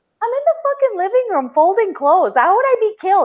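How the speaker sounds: high, squeaky, mock exasperated indignation.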